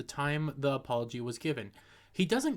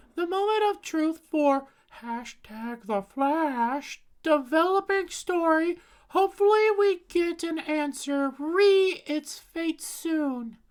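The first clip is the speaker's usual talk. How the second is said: very high-pitched, nasally raised voice; 6 dB louder than usual. Reading out her post on the flash's fate, imitating her nasally high-pitched voice. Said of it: "that's quite literally how she sounds".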